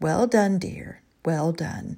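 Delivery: gentle, soft, slow murmur under the breath. Narrator reads Eleanor watching two men at the fence, murmuring softly. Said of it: "she smiled softly and murmured".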